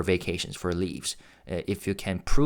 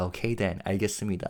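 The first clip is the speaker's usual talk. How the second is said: put-on overpolite tone at a much slower pace; 4 dB quieter than usual. Retelling Taeyong answering a man who begged him to go easy: Taeyong's mock-respectful reply. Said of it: "in a really funnily respectful tone".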